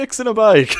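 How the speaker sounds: loud hollered response. Telling how a man spotted them fixing a bike, imitating a man shouting back. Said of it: "He shouted back".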